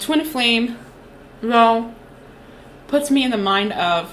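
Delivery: speaking with mouth full, chewing. Speaker explaining something to viewers while eating, talking while chewing. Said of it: "I'm chewing, sorry".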